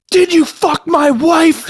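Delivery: mock very high, slow, drawn-out shout. Acting out a favorite movie trope line: imitating someone yelling. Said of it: "somebody yells".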